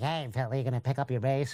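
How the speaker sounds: mock, exaggerated nasal voice. Teasing a friend backstage on tour, imitating Philly's nasal voice. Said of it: "because he has a very nasal voice".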